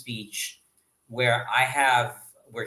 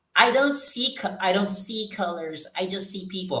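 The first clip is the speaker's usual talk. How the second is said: whining, complaining voice, pitched up; 8 semitones higher than usual. Imitating people who claim not to see color: imitating a whiny voice. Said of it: "I shouldn't say it in a whiny voice".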